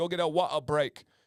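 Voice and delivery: imitated British accent. Imitating a man yelling at soccer practice, British accent. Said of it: "with a British accent".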